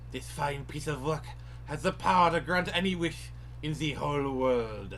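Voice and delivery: bad, wobbly accent drifting toward German. Voicing a character's line while playing a game: drifting into bad German accent. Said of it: "slowly drifting into German".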